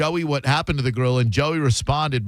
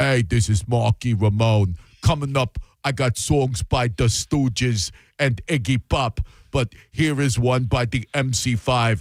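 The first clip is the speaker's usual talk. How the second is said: put-on thick, slow New York accent, laid on heavily. Imitating how a host sounds cracking the mic, Malky Ramone thick New York accent. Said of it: "He has such a thick New York accent that when he cracks the mic, it's like".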